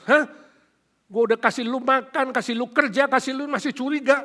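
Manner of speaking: indignant mock nagging. Acting out how Joseph grumbles at his suspicious brothers, acting out grumbling. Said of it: "dia ngomel-ngomel".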